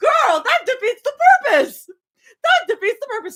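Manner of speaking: shrill, very high, loud shouting. Complaining about how other people mark spoilers, yelling. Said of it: "I'm yelling because".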